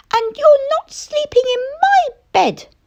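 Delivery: very high, tiny squeaky bear cub voice. Reading a story, the little bear refuses Mister Lazy, squeaky little bear voice. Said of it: "squeaked the little bear".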